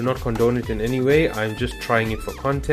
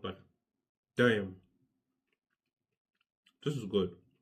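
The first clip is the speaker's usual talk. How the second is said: speaking while chewing, mouth full, much quieter; 4 semitones lower, 11 dB quieter than usual. Tasting food on camera, the speaker keeps talking with mouth full. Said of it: "not to talk with food in my mouth".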